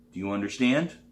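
ordinary delivery

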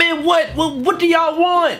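screaming, yelling. Talking on a phone while others keep interrupting: screaming. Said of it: "What you screaming at me for?".

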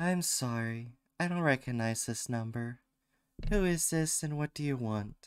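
put-on girl's character voice. Voicing a game character's reply after being asked: put-on girl voice. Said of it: "you can try a different girl voice".

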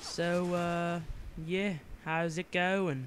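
clumsy put-on British accent, drawn out, very slow. While playing a game, trying out a bad British accent. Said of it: "I'm really bad at British accents".

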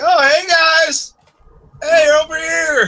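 very high, eager, excited voice. Voicing a masked character waving the group down: excited, waving greeting. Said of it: "he seems to be very, very excited".

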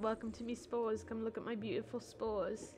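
soft, quiet, fake British accent. Speaking as Will Wright to a co-host, put-on British accent as Will Wright. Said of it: "Will Wright does not have a British accent".

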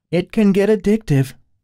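bubbly, effervescent, very high-pitched, bright voice. Narrator reads Allie chiming in while Kyle questions Sherita, effervescent. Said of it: "chimed in with a surprising amount of effervescence".

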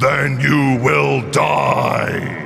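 booming, rough, inhumanly loud and strong shout. A narrator voices a voice that fills the listener's head: inhumanly loud shout. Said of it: "inhumanly loud and strong ... shouting".

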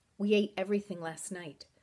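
ordinary delivery

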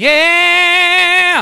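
very high, drawn-out Southern drawl on yeah. Urging the audience to shout back, saying yeah like Southern folks do. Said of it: "like Southern folks do".

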